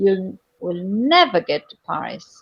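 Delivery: word "never" lifted into a high key. Explaining contrastive prominence and key: high-key stress on never. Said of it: "never will be with high key".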